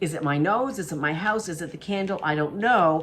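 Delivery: ordinary talk, nothing marked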